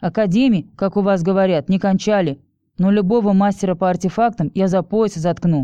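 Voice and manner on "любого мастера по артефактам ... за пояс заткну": ordinary delivery, nothing marked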